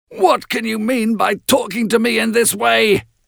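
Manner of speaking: booming, thundering roar pitched very high. Heathcliff confronts the narrator who cried out at night: thundering. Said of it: "he thundered".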